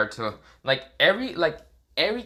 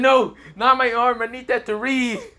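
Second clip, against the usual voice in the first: very high, loud, shrieking panicked scream; 11 semitones higher, 5 dB louder than usual. Narrating a scene where another character demands his arm: Kakashi screaming in panic. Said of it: "Kakashi kind of just screaming".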